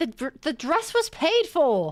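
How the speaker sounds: loud, high indignant outburst, blurted out.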